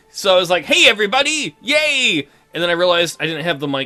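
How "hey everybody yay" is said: bright, upbeat, high, happy, bursting with energy. Retelling a first try at opening the recording: re-enacting an energetic, happy greeting. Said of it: "full of energy and happy".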